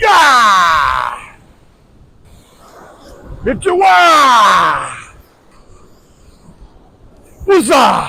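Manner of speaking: slow, drawn-out, high swooping holler. Casting a fishing line from the beach, yelling and screaming while casting. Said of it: "Yelling and screaming while I'm casting".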